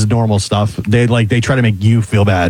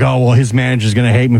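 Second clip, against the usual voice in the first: plain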